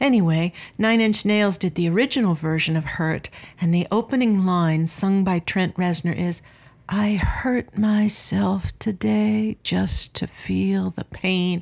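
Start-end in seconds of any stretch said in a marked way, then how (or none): 6.9-11.6 soft, weak whisper, much slower pace. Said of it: "I'm kind of whispering".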